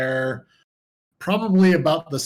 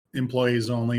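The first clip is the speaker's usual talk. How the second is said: normal talking voice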